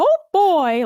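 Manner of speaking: high, loud put-on cartoon mouse voice.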